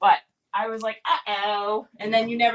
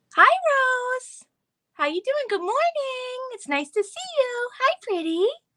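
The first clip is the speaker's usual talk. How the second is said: very high little birdie voice, one word drawn out. Greeting someone who asked for it, in a birdie voice. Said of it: "greet her in my birdie voice".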